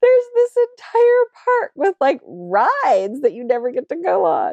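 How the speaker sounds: incredulous, pitched way up in disbelief.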